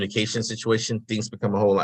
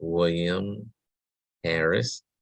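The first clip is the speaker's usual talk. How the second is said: unhurried, slow, calm, low-energy reply; 3 semitones lower than usual. Retelling giving a name at a pharmacy counter: imitating own slow low-energy reply. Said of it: "talked slower like this".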